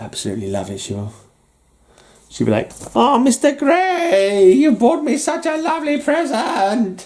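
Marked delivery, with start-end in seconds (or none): 2.9-7.1 put-on squeaky, silly high girl voice, drawn out. Speaker imagining thanks for a comic-book birthday present: silly Matilda voice. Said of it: "I love making a silly voice for Matilda".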